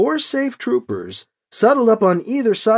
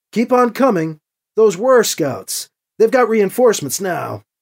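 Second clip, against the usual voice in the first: usual speaking voice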